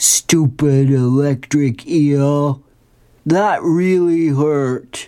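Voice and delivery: mock cartoon character voice, slow.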